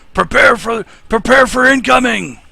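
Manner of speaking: dwarf voice yelling. Voicing a fleeing dwarf who raises the alarm: dwarf yelling an alarm. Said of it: "you can hear him yelling".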